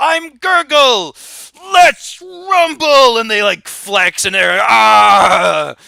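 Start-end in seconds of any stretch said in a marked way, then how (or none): 0.0-3.2 very high, slow, drawn-out boastful yell. One Underhill brother jumps out of a trench coat, yelling as Gurgle. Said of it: "The other one yells".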